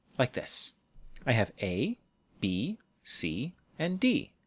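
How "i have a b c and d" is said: rising list tune on A, B, C, final drop on D. Intonation lesson on listing items: rise on each item, fall at end. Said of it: "We use a pattern of rise, rise, rise, and fall".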